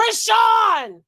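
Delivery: very loud, high-pitched, shrill scream. Screaming a name in a Kai Cenat voice. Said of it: "In my Kai Cenat voice, I am screaming".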